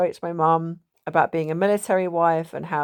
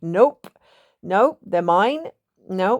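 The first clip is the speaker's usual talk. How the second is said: put-on stubborn, cross, grumpy little toddler voice; 3 semitones higher, 3 dB louder than usual. Retelling gripping the flowers as a toddler while mum coaxes: mock-grumpy toddler refusal. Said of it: "I was getting a bit grumpy".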